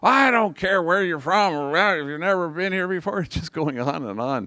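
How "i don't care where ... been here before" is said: acted, high, ranting, screaming yell. Retelling a man screaming back at a visitor in boston; imitating someone screaming. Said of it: "he's screaming at the top of his lungs".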